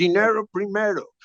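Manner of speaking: put-on strong American accent. Retelling what a tour manager said: imitating a very American accent. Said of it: "with a very American accent".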